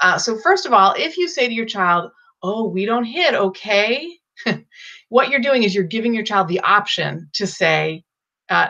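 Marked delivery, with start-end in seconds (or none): 2.4-4.2 final okay lifting upward in rising intonation. Showing what one might say to a child, rising at the end on okay. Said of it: "when we bring our words up at the end of a sentence".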